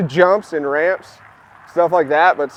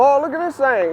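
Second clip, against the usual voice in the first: put-on heavy, thick Texas accent with raised pitch; 8 semitones higher than usual. Retelling a skate shop visit, a speaker imitates a man's thick Texas accent. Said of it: "He had a real thick Texas accent".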